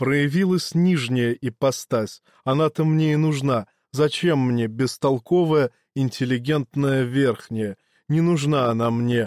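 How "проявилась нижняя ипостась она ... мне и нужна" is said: usual speaking voice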